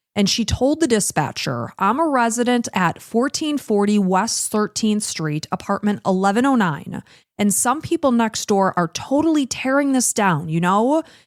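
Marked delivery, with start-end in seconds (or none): none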